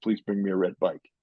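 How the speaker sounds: ordinary talk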